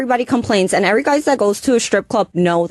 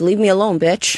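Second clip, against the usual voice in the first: ordinary talk, nothing marked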